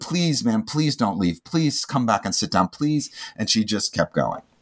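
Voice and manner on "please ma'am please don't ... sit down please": mock earnest, pleading tone on every word. Retelling asking a woman walking out not to leave: retelling own pleading. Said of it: "I was pleading with her".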